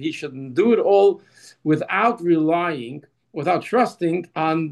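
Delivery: slow, deliberate reading-aloud delivery. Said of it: "so I'm gonna read it slowly".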